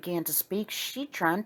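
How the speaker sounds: ordinary delivery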